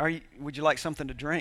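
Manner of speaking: put-on very sweet tone. Retelling the wife offering a drink: imitating a very sweet tone. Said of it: "very sweetly".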